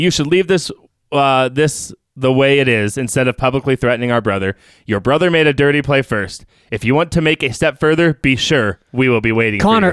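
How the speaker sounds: ordinary delivery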